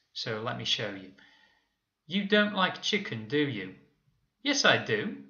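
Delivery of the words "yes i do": pitch climbs through yes, I do, rising on yes. Disagreeing with a negative question, rising tone on "yes, i do". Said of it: "I'm also raising my tone of voice to show disagreement".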